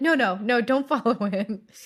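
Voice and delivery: mildly urgent, pressing dispatcher voice. Retelling the police dispatcher on the phone, imitating a little urgency. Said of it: "has a little urgency in her voice".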